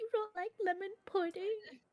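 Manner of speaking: in a whisper. Voicing a character speaking to Moon Wizard: whispering.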